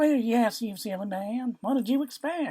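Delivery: very high, forced-light, sweet simpering voice. Reading a woman's reply to a man she is lying to, light simpering voice. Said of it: "She allowed herself just a tiny taste of his lifespan through his mouth, / [name], whose real name was not that, struggled to keep her voice light. / struggled to keep her voice light. / struggled to".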